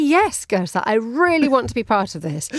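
ordinary delivery

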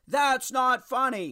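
lightly sketched mock half-shouting. Telling the group a story, retelling dad's shout. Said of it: "my dad shouting".

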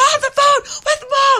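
high, loud, laughing scream.

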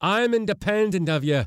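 high-pitched, shrill yell. The skipper answers the mate's threat to cut him loose, shouted. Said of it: "the skipper shouted".

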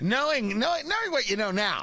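halting, stop-and-restart delivery. Retelling a question from producer Ari: impression of producer Ari. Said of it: "that's my impression of you, Ari".

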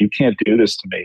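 normal talking voice

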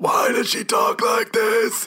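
strained, high, slow, creepy raspy doll-like voice.

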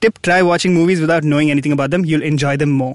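ordinary talk, nothing marked

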